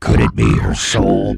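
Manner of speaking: very low, slow, creaky spooky ghost-story voice.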